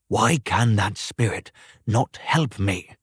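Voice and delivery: plain reading voice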